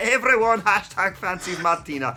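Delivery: put-on Scottish accent. Reading out a tweet by Session Moth Martina in a Scottish accent. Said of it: "I'm gonna do a Scottish accent".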